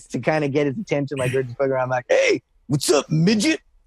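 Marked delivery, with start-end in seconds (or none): 2.1-3.6 goofy put-on voice, high, swooping and teasing. Retelling greeting a friend to get his attention: imitating Bam's voice. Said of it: "I said to him in his voice".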